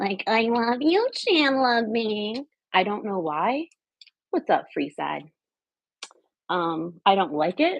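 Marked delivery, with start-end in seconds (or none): 0.3-2.4 laughing sitcom character voice, spoken through laughter. Admitting you've started laughing like a Friends character without meaning to, do a Janice from Friends impression. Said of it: "I'm laughing like Janice from Friends".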